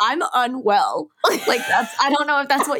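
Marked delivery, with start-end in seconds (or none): 0.0-1.1 sarcastic tone, sounding overwhelmed with joy. Quoting own reaction when something exciting happens: imitating own sarcastic tone. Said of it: "I'm almost saying it sarcastically".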